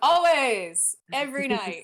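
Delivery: very loud, high-pitched shout. Voicing a man leaving with the drinks who yells back: yelling back. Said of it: "He yells back".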